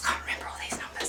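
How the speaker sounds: whispering. A presenter reading specs from notes makes a whispered aside.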